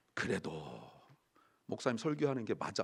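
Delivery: quiet, low, soft, reassuring voice.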